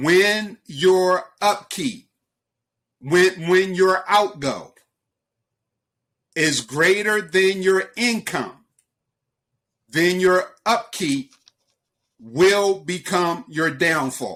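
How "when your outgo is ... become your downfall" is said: slow, unhurried delivery. Repeating a saying so listeners can write it down: speaking slowly. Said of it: "I'm going to say it slowly".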